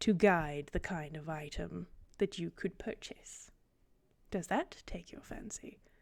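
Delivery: secretive, unvoiced whisper.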